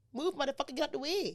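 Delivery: put-on Bajan accent. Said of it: "Is that your Bajan accent?".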